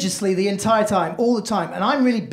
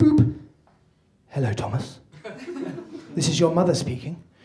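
dropped, low, cold, stiffly formal tone; 4 semitones lower than usual. Acting out a mother's third voicemail, imitating mother, low and formal. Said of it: "you can really hear the tonal drop in her voice and everything becomes formalised".

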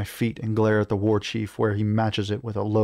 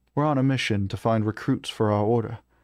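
plain reading voice

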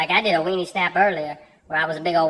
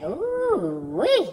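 mock suggestive, very high, with "ooh" stretched; 9 semitones higher than usual. Retelling a coworker's message about a photo: imitating a suggestive tone. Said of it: "you make it sound dirty there".

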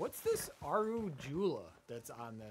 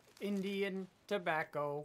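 robotic, machine-like computer voice; 4 semitones higher than usual. Signing off a stream, the speaker says the phrase like a computer. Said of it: "Why did you say like that?".

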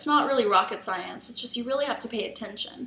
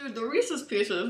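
speaking with mouth full of food; 3 dB quieter than usual. Tasting the cookies, the speaker is talking with mouth full. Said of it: "Talking with my mouth full here".

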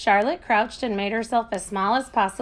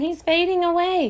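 ordinary delivery

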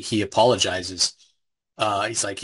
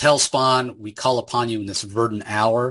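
normal talking voice

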